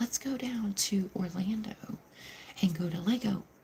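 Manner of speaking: very quiet, hushed voice, kept down low. Repeating a trip plan quietly so someone nearby won't hear: saying it quietly. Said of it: "I can't say it very loud because somebody will hear".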